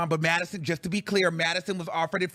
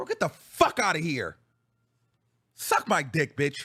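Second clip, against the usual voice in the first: furious, angry outburst with swooping pitch; 2 semitones lower than usual. Ranting about having to pay out of pocket: angry. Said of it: "I'm so mad".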